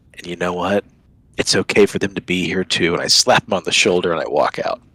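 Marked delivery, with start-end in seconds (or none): 0.2-2.9 speaking low and privately. Pulling a companion aside as everyone leaves the manor, the character speaks in a low voice. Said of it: "in a low voice".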